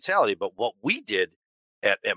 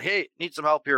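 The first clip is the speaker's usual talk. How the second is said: casual, ordinary, pitched-up yell; 6 semitones higher than usual. Retelling a mechanic calling across the shop for help: imitating someone yelling. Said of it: "he screams over to one of our senior guys".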